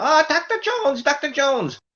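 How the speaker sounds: put-on very high-pitched, childlike kid voice. Speaker recalls voices done since childhood, quoting the kid from the Indiana Jones movies. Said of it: "the kid from the Indiana Jones movies that would go".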